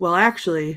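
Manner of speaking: plain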